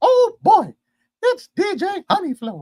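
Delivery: high, loud, swooping cartoon voice, pitch up, stretched out. Saying an intro line in a Mickey Mouse voice. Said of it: "That was Mickey Mouse".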